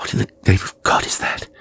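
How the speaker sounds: hushed whisper. Reading a story aloud, a character hears growing blows: whispering. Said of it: "he whispered".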